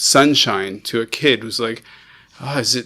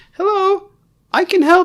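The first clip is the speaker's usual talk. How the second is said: tiny, very high-pitched, slow piping voice; 5 dB louder than usual. Describing somebody piping up from the side, small little voice. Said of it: "little voice".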